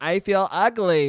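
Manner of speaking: put-on female voice. Mocking a common complaint, in a put-on female voice. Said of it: "it's usually a female voice being like".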